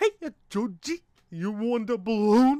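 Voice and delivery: booming, high-pitched, loud, belted character voice. Comparing what two actors did with Pennywise: Pennywise voice. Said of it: "what both actors did with Pennywise".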